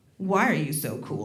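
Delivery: low, soft, mocking, suspicious tone.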